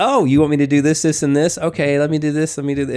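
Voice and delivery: put-on high, eager, keen voice. Describing teenagers going through an exercise, imitating River being eager. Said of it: "And then River's over there like".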